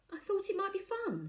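very high, uncertain voice trailing off. A girl suggests a birthday idea to her blankly staring family, trailing off. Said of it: "she trailed off".

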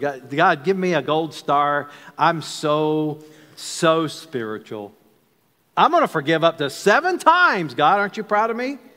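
smug, proud, self-satisfied, pleased-with-himself voice. Acting out Peter speaking to God about forgiveness, imitating Peter's proud voice. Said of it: "Can't you just hear the proud voice of Peter".

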